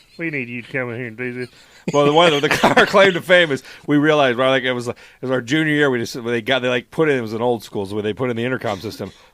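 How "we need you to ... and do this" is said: very hushed, quiet teacher voice. Recalling doing teachers' voices at school: Mister Frost impression. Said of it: "Mister Frost talk like this".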